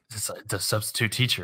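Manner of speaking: soft, hushed, leaning-in whisper. Retelling a player's whispered hint during a party game: imitating someone whispering. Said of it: "he whispers in my ear".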